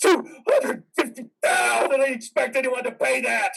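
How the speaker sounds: shouting in anger. Refusing to calm down about the hospital bill: angry yelling. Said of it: "I'll yell if I want to".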